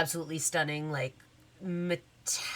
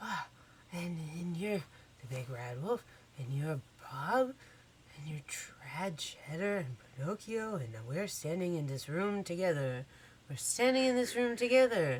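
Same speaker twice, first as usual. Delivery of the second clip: breathed out, hushed awestruck wonder. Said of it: "these kids look flabbergasted".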